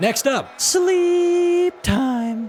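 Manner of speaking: very high cracking voice, "sleep" stretched. Reviewing game bosses and announcing the next one, with a voice crack. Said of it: "What was that voice crack?".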